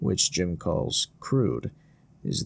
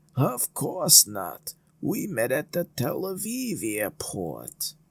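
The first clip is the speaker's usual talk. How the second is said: put-on Yiddish accent with raised pitch; 7 semitones higher than usual. Retelling a prank phone call, the caller speaks in his best Yiddish accent. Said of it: "putting on his best Yiddish accent".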